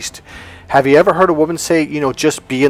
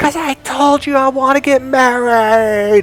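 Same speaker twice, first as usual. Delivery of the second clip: very high, drawn-out, acted-out screaming shout; 11 semitones higher than usual. Retelling how the student Adam answered: imitating Adam screaming. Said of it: "And he screams".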